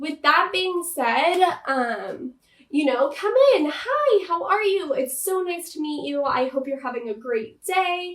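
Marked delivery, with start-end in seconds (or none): 3.7-8.2 bright, positive, welcoming, upbeat, energetic tone. Demonstrating how to greet someone coming in, upbeat, positive, energetic. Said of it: "Always have like this upbeat, positive attitude, a um, energetic voice".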